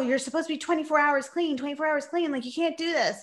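high, repeated, hammering yelling. Recalling her dad yelling at her mom, retelling his yell. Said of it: "my dad was like yelling at her saying".

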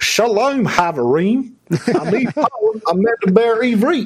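put-on heavy Louisiana Creole accent. Imitating a girl you know from Louisiana speaking Hebrew, use a thick Creole accent. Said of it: "a girl I know from Louisiana with a thick Creole accent".

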